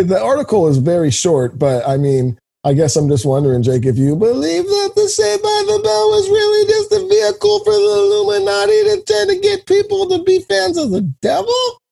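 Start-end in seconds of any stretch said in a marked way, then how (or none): 3.8-11.5 voice pushed way up, very high-pitched tone. Asking the other speaker a question, in a high-pitched tone. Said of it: "when you said it in that like high-pitched tone".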